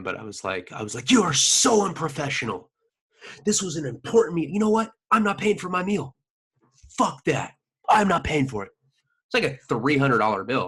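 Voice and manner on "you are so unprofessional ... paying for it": put-on full temper-tantrum tirade, high, angry ranting. Retelling screaming at staff who kept his pregnant companion waiting: imitating himself screaming angrily. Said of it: "I was screaming like that".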